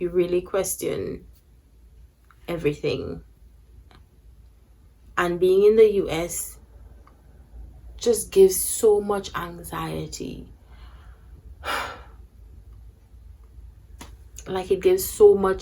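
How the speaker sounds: emotional, moved. Speaking about the anxiety of studying in the US, getting emotional. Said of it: "I'm even getting a bit emotional".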